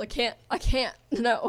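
slow voice breaking and cracking on the words. Retelling how the voice broke at the start: imitating own voice cracking. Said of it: "my voice cracked in the beginning".

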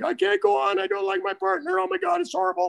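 play-acted high tearful crying wail, very high. Retelling how the understudy refused to go on; imitating someone crying. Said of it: "And he was crying".

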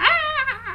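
high, shrieking skeleton scream. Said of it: "Just scream".

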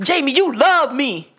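mock serious, stern, firm no-nonsense tone. Retelling what a woman told a man, in a mock-stern voice. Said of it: "she told him with the stern voice".

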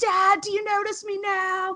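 mock, very high-pitched, emo-style scream. Describing early-2000s emo bands screaming to their fathers: imitating emo-band scream. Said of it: "screaming out to their fathers like".

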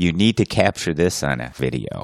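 ordinary talk, nothing marked

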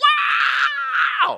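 high, loud ecstatic holler. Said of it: "shouting, screaming, hollering".

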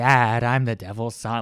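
speech from the side of the mouth. Describing a movie character, speaker imitates Little Nicky talking out of the side of his mouth. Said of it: "he talks out of the side of his mouth like this".

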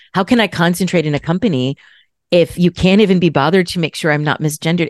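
ordinary talk

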